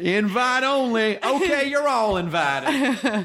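put-on high, slow, nasal Tennessee accent. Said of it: "that's how I like to drop".

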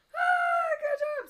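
booming, very high, shrill yell, drawn-out ah. Retelling how he joined in after hearing that she passed and is certified, imitating someone yelling. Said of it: "So he joined in on the yelling".

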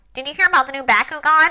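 put-on loud, rapid, rattled-off child voice. Remembering a fifth-grade classmate after seeing a TikTok: imitating a fifth-grade kid. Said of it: "that's how he talked".

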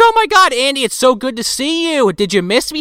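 put-on, high-pitched, gushing, over-the-moon overjoyed voice. Retelling a character greeting someone she is over the moon to see: imitating an overjoyed greeting. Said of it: "over the moon to see this guy".

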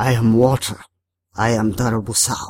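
put-on hoarse, waterlogged, very low rasp with thick accent. A voice from the water answers the narrator's question: hoarse, waterlogged Darabusao voice. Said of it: "hoarse, waterlogged, speaking in an accent so thick".

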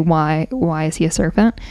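ordinary delivery

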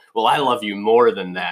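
mock-sarcastic delivery. Discussing a film scene, the speaker acts out a character's reply: retelling a sarcastic line. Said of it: "she did like sarcastic".

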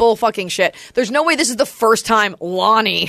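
ordinary delivery

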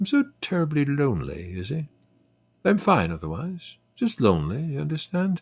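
put-on calm English accent, very high, swooping. A narrator reads a woman asking a boy for a favor; spoken calmly. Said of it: "She spoke so calmly".

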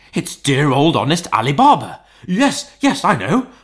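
ecstatic, high-pitched and loud. Narrator reads Scrooge exclaiming on seeing Ali Baba at the window, ecstatic exclaiming.

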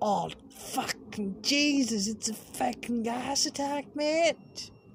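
drawled put-on Australian accent. Describing what people would think looking at the sky, in a put-on Australian accent. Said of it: "I don't know why I'm doing an Australian".

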